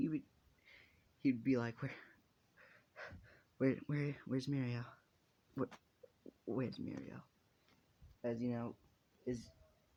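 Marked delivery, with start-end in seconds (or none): 1.8-7.2 frantic, panicked, stammering, tripping over the words. Acting out a character looking around for mirio: panicking. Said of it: "he would begin to panic".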